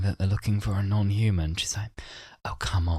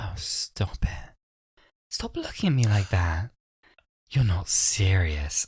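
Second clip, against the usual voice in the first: very slow, drawn-out, put-on posh voice. Quoting her line from the series, imitating a really posh voice. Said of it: "she puts on this really posh voice for that moment".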